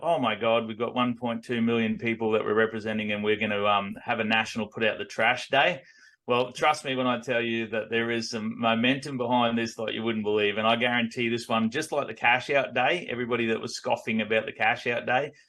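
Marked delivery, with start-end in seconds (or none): none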